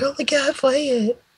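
very high mock fan begging. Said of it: "people are like".

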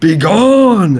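high, all-out scream at full force. A player's character screams directly at an Earth Elemental to intimidate it: screaming. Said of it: "I'm just going to scream directly at it".

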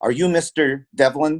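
put-on with a Serbian accent. Retelling a girl approaching the table in a cafe: thick Serbian accent. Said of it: "in a thick Serbian accent asked me".

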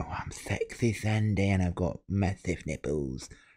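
soft, slow, heavy chain-smoker's voice. Mocking how the other ladies sounded, imitating them in a heavy smoker's voice. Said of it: "they smoke 50 a day".

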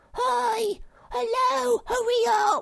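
shrill, very high, loud, very slow shriek. Sniff, who has gone ahead, calls to the others: shrieked. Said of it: "shrieked Sniff".

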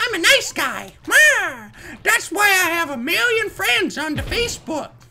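tiny, squeaky, high cartoon mouse voice. Playing an online game and fooling around, in a Mickey Mouse voice. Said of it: "That's how I sound like Mickey".

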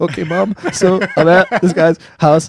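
high, slow, sheepish voice.

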